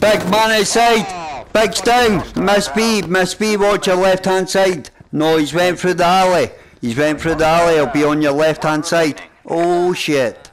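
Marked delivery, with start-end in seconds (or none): 0.0-9.2 high, loud shouting. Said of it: "Sorry if I shout".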